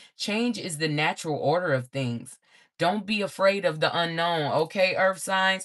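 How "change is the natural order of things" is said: ordinary delivery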